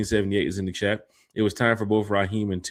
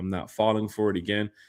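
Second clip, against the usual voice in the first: plain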